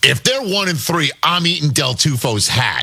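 plain

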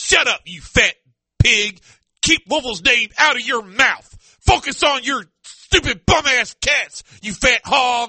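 play-acted irate sports-fan rant, angry tone. Host acting out louisville fans who get mad at the show, impersonating angry louisville fans. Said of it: "doing an impersonation of Louisville fans".

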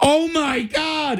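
high, slow, drawn-out, alarmed, panicked gasp.

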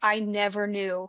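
ordinary delivery

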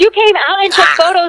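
shouting angrily. Arguing on the phone about a septic inspection: yelling. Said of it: "why are you yelling at me?".

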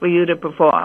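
ordinary delivery

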